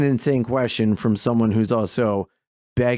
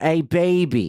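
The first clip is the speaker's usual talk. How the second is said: put-on "baby" stretched in Delaware accent; 4 semitones higher than usual. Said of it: "Ours would be like".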